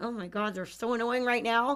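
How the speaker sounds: strained, forced cheer through gritted teeth, frustrated. Showing how to hide frustration after crating a dog: speaking through a forced smile. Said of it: "smile through my teeth and say".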